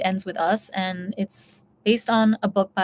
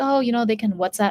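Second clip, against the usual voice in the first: dismissive, offhand, passive-aggressive brush-off tone. Retelling an actress's answer to an interviewer: imitating a passive-aggressive tone. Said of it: "passive-aggressive response".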